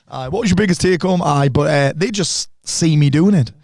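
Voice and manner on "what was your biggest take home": put-on high, teasing child's voice. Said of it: "Like, in that voice".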